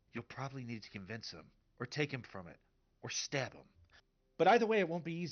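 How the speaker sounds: loud stage whisper. Retelling a scene, the speaker gives a woman's line in a stage whisper. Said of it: "she does a stage whisper".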